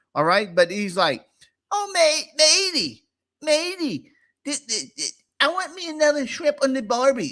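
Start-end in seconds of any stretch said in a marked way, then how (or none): 1.8-7.4 very high-pitched, stuttering, stammering chatter. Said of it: "impersonation of, of, of [name]".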